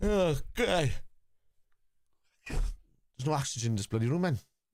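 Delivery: slow speech with words stretched by yawning. Talking to the lads in a stuffy room; yawning. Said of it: "I'm yawning".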